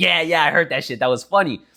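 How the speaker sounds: ordinary talk, nothing marked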